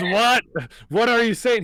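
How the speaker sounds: put-on high, loud old man goblin voice. Voicing an old man goblin answering a yelled question: old man goblin voice. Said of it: "He says this in the goblin language".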